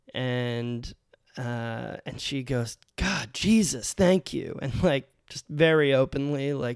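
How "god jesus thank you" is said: mock huffy, impatient, pitched-up exasperated outburst. Retelling a student's outburst on entering the cafeteria: imitating an impatient student. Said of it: "the student was being very impatient".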